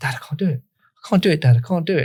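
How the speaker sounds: put-on upset, emotional child voice, pleading tone. Retelling a son's words after hard football runs: imitating son getting emotional. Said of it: "And he got really emotional".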